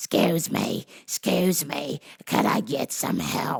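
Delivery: put-on raspy, smoker's rasp granny voice. Recalling the customer of the week asking him for help: granny's Marlboro Red voice. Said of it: "with that Marlboro Red voice".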